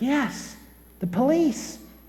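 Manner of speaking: put-on small child's soft, high, hushed half-whisper. Telling a joke, voicing a little girl on the phone: half-whispering. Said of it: "the child said with a whisper again".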